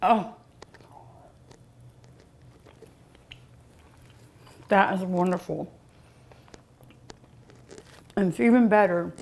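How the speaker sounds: talking with mouth full. Tasting a dessert with a Samoa, talking with mouth full. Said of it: "I'm so sorry to talk with my mouth full".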